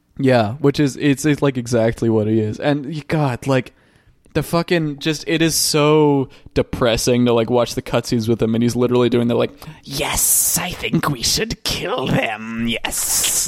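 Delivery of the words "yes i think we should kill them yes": slow, whispered, hissing lizard-villain voice. Mocking a lizard ninja's cutscene lines: imitating a hissy lizard voice. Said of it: "They give him the, like, hissy voice".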